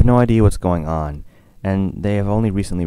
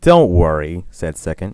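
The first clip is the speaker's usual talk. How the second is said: ordinary delivery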